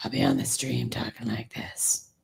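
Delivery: breathy whispered superhero voice. Joking about how coughing will wreck the voice: Batman voice. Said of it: "it's Batman is what that is".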